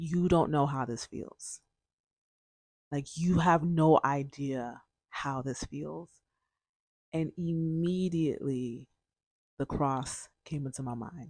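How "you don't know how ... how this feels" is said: quieter, acted-out tearful plea, imitated crying. Speaker retells crying under a blanket and speaking to God: retelling a tearful plea. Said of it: "I was crying and I said to God".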